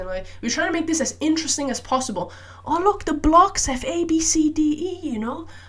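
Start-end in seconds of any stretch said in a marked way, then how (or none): 2.6-5.5 put-on very high sing-song baby talk. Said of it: "such a high-pitched voice".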